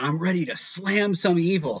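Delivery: high, drawn-out calling voice. Retelling how a friend arrived outside the theater: imitating Ian yelling. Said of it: "And he just yells".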